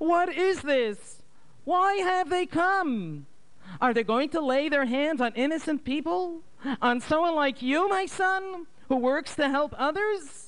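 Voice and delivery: very high, fearful, frightened crying out. A mother sees uninvited visitors come for her son: frightened cry. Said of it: "cried out with a frightened voice".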